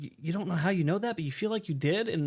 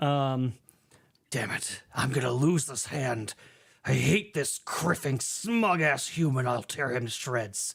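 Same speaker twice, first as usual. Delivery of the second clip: angry sounds, lower pitch; 4 semitones lower than usual. Role-play character heard after the narrator's cue, angry. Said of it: "You hear the angry sounds again".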